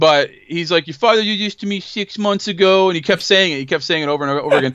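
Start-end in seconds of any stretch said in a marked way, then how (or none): 0.9-2.9 put-on New York accent, slower. Recounting a line a man kept saying to intimidate the speaker, imitating a put-on new york accent. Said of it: "he's trying to talk like a New Yorker".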